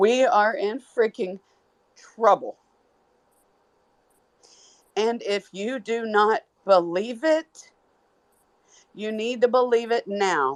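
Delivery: trying not to cry, fighting tears. Longtime Houston resident warning listeners; trying not to cry. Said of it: "I'm trying not to cry now".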